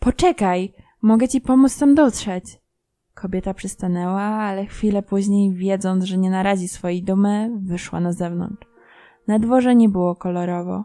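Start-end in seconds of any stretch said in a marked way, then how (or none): 0.0-2.4 calling out loudly, shouted. Regretting his words, he calls to the woman leaving, shouting after her. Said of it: "krzyknął za kobietą".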